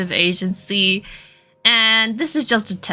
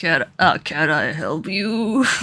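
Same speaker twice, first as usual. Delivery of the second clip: low, put-on old man voice; 5 semitones lower than usual. Speaker trying to voice an old-looking character, attempted old man voice. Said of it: "how do I do an old man voice?".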